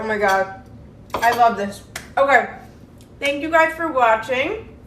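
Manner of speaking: talking with mouth full. Tasting the finished dish and thanking viewers, talking with mouth full. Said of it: "I really shouldn't talk with my mouth full".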